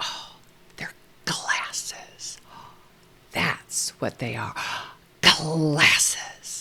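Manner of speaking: slow, drawn-out, hushed whisper. Showing a whispering trick for naming objects to a child: whisper demo to a child. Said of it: "a good little trick is a whisper".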